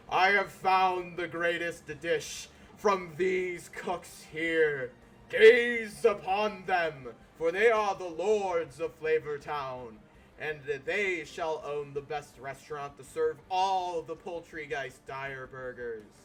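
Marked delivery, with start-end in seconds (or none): 0.1-9.9 very loud, thundering, booming godlike voice. Narrating a story where a figure ascends into the sky, booming voice. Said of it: "his voice booms and he says".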